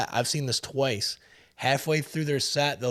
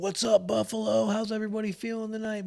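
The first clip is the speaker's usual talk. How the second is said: put-on thick, strong Canadian accent, pitched up; 8 semitones higher than usual. Retelling a drummer greeting the crowd on the microphone, strong Canadian accent. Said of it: "he's got a strong Canadian accent too".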